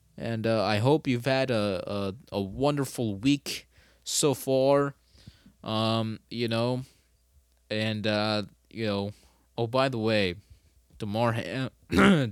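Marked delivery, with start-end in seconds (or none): 11.0-12.3 glitching, breaking voice cracking mid-word. Saying goodbye at the end of the podcast: voice glitching. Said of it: "what the hell happened to my voice there".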